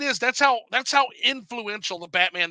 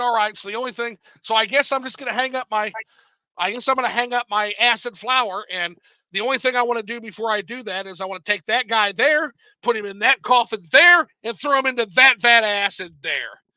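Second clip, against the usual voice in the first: ordinary talk, nothing marked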